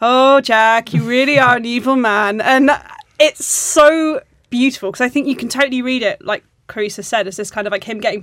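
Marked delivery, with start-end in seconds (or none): 0.0-2.4 flat put-on German accent, louder, slower. Retelling what a man said to Jack, in a flat German voice. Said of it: "flat German voice and he's just like".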